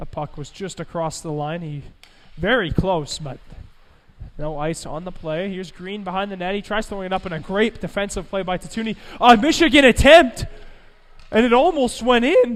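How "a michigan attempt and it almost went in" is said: very loud, high call with voice cracking. Play-by-play announcer calling a hockey game, voice cracking. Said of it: "Pardon my voice crack".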